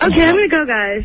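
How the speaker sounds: frightened, nervous, high scared voice. Speaker signs off to the group while others tease her: scared. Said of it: "Why does she sound scared?".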